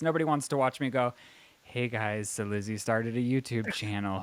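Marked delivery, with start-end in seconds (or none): 1.7-4.2 bored, flat, low monotone with no enthusiasm. Showing a youtube intro nobody wants to watch: flat, low-energy, no enthusiasm. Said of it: "a snore fest".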